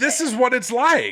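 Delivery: yelling.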